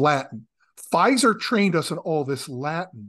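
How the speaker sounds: plain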